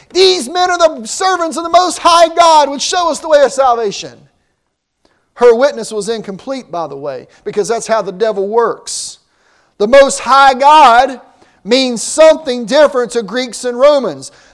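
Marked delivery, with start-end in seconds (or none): 0.2-4.3 put-on girl's high-pitched shrieking cry. Retelling a story, imitate a girl crying out in a shrieking, high-pitched voice. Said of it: "cry out in a shrieking, high-pitched voice".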